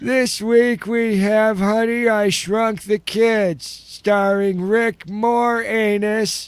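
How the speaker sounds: very high, deliberate, slow theater-announcer voice. Retelling calling the theater to hear the old announcer: imitating the old theater announcer. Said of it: "to hear the guy like".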